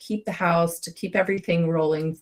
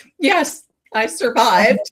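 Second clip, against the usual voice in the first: very loud, high sobbing cry, words choked out; 7 semitones higher, 8 dB louder than usual. Telling how she answered a kid after surviving a transplant, retelling own sobbing. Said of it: "I started sobbing and I'm like".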